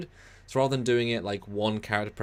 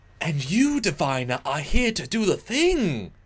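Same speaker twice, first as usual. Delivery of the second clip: odd, high, loud, stilted overacted line reading; 7 semitones higher, 5 dB louder than usual. Retelling an actress's odd line reading: imitating odd overacted delivery. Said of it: "the lady's acting is a bit odd sometimes".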